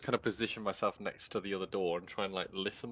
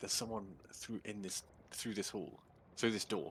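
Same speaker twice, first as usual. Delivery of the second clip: soft, stumbling whisper; 9 dB quieter than usual. Whispering back in character after hearing footsteps beyond the door: whispering. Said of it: "I kind of whisper back".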